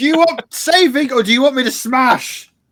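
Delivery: very high-pitched, loud yelling out. Voicing a character calling to others from a dust cloud: yelling out. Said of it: "I'm yelling out in the middle of my dust cloud".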